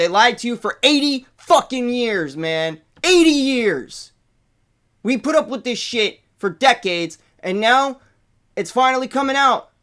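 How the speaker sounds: fired-up, upset, worked-up outburst. Talking to listeners about a long-hidden topic finally coming out, upset. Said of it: "I'm sorry. I'm upset".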